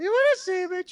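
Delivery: very high, loud, cartoonish kids' TV character voice. Describing how someone sounds, doing a Sesame Street character voice. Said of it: "it's kind of like a Sesame Street character".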